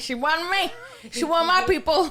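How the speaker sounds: high, loud, thick mock Irish accent.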